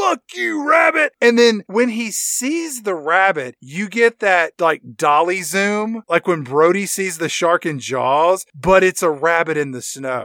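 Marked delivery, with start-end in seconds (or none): 0.0-1.1 furious, very high, shrieking scream. Retelling a scene where the character fires at a rabbit: imitating a scream. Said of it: "he fires the gun and he screams".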